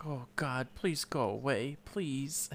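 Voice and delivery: very soft, hushed half-whisper under the breath. Retelling a movie scene, begging a visitor to go away: imitating half-whispering to herself. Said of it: "she's kinda whispering to herself".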